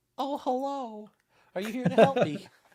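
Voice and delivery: very high deer voice. Voicing an injured deer looking up at the officer in a video: voicing the deer. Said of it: "head up and its ears up, like".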